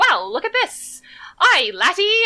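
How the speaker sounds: very high, loud, bad Irish accent, swooping lilt. As a companion creeps along behind, Ketta speaks, bad Irish accent as Ketta. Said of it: "a bad attempt at Irish".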